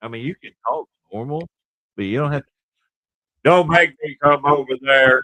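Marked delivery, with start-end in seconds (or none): 3.4-5.2 very loud, booming, all-out holler. Mimicking the other speaker's warning: imitating someone being loud. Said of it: "you being all loud and stuff".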